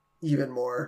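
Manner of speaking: mumbling under breath. Retelling a cartoon scene, a character giving a foot rub: muttering under his breath. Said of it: "under his breath".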